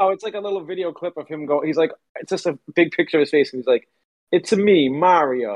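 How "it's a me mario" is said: very slow, deliberate, drawn-out delivery. Retelling a video clip of an actor's Mario impression: Mario voice. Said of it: "I'm not gonna do it like that".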